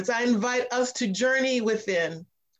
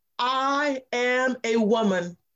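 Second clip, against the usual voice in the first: normal talking voice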